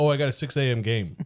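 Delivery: plain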